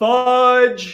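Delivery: all-out yell, very high, very loud and shrill. Retelling a missed shot, imitating own loud yell. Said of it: "and I just yelled".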